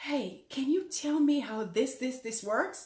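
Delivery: hushed, very quiet voice. Retelling a gentleman's question on a plane: imitating someone speaking very quietly. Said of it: "he says very quietly".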